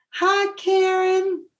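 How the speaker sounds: sugary, very high, sweet little voice. Telling how a woman greeted her, the speaker mimics her sweet little voice. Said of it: "she said in her sweet little voice".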